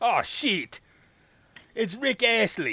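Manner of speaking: rough New Zealand accent attempt. Retelling a story about a record, the speaker voices the man's reaction in an attempted New Zealand accent. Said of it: "What accent were you doing?".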